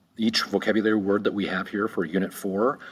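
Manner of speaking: plain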